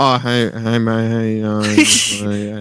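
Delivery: hesitant, muffled, quiet, indistinct muttering. Retelling how a customer spoke from a distance: imitating a mumbling guy. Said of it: "Turn the volume up".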